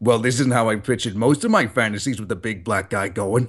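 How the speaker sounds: deep masculine voice. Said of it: "I desperately wanna dub that scene with".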